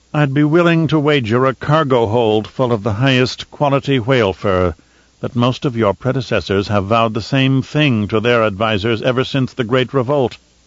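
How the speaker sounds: plain reading voice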